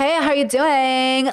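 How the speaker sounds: flamboyant, campy, affected voice. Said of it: "He goes like".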